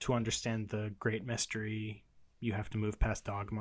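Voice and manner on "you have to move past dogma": normal talking voice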